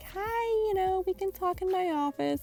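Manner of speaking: very high, sugary, fake sweet put-on voice. Retelling how the principal greeted the speaker, mocking her little fake voice. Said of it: "the principal put on her little fake voice".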